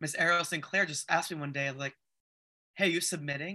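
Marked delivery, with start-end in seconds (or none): 2.7-3.6 put-on gruff voice. Retelling when Ariel Sinclair asked the speaker about submitting: gruff Ariel Sinclair impression. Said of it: "I love her voice. It's so gruff".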